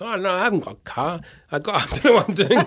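bad, terrible put-on Japanese accent. Retelling an anecdote, the speaker quotes a man in a bad japanese accent. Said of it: "That's a terrible accent".

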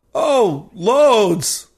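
acted-out sarcastic, high voice between gasps. Answering the tech's question about whether it's better, gasping, sarcastic. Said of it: "I say, gasping".

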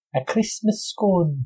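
put-on Scottish accent. Showing how they kept saying a phrase all afternoon, in a scottish accent. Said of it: "I couldn't stop saying it in a Scottish accent".

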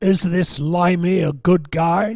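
put-on voice with a Texan accent. Retelling overhearing a phone call about himself, in AJ Foyt's Texan voice. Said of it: "AJ Foyt's Texan voice saying".

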